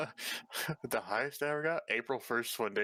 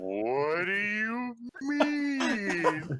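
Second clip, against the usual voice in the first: very high, very slow, dragged-out stoned drawl; 11 semitones higher, 5 dB louder than usual. Retelling his reply to the dude in the front seat: imitating own slow high talking. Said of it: "I was talking like that for a while".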